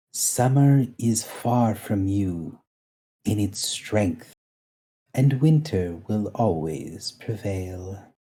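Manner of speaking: soft calming whisper under breath. Game master voices a character whispering to the player under her breath, whispered calming tone. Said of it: "whispers under her breath".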